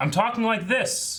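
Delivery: very high-pitched, fake, loud projecting voice. Imitating how the prince was voiced in his speeches: fake loud speech voice. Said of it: "he did a classic like".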